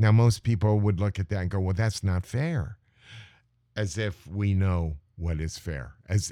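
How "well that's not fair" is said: ordinary talk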